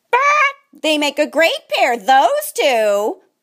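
smug, self-satisfied, gloating crowing jeer. Narrator reading the chickens' remark about the donkey and piglet: gloating. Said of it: "the chickens gloated".

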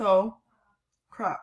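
chewing while talking, mouth full. Speaker reacts to a video while eating grapes, talking with mouth full. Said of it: "Sorry, I'm eating grapes".

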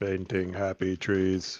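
slow mechanical voice.

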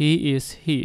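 voice drops away, falling intonation on "here". English lesson contrasting rising and falling intonation: falling intonation on here. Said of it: "အဲ့ဒါကတော့ falling intonation လို့ခေါ်ပါတယ်".

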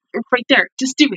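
ordinary delivery

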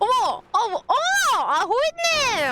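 flustered, delighted, thrilled squeal.

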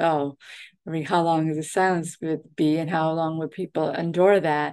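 ordinary talk

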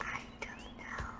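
very quiet whisper. Asked what he wants to do, a speaker answers in a whisper. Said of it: "Why are you whispering?".

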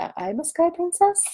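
high-pitched, worried, concerned cat voice. Voicing the cat who looks concerned on camera: voicing a concerned cat. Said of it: "She's like".

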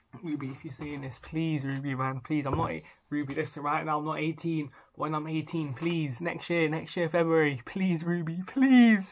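mock joking pleading, begging tone. Addressing Ruby Rose through the camera, mock begging. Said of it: "I'm begging".

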